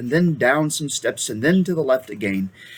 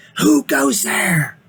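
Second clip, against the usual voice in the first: very high, snarling voice; 9 semitones higher, 4 dB louder than usual. Two sentinel badgers leap up and challenge the newcomers, in a snarling voice. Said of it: "asked them in a snarling voice".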